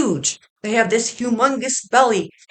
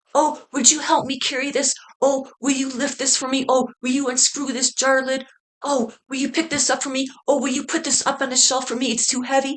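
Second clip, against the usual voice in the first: helpless, needy, pleading tone; 3 semitones higher, 3 dB quieter than usual. Imitating a woman who asks men to carry things: mock helpless asking. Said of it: "I can see her carrying on like that".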